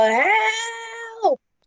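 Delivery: yelling in a put-on manner. Playing a character calling for help while under attack: yelling for help in character. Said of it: "I'll just yell".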